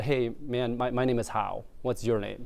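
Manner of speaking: usual speaking voice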